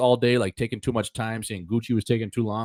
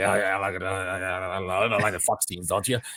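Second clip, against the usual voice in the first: put-on drunk, slurred talk; 3 semitones lower, 4 dB quieter than usual. Retelling going through movie quotes with a friend: imitating R A talking drunk. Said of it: "especially when he's fucking in the bag".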